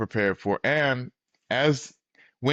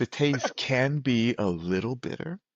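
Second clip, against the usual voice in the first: imitated whisper; 3 dB quieter than usual. Retelling what someone whispered before the ceremony: imitating a whisper. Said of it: "someone whispers to me".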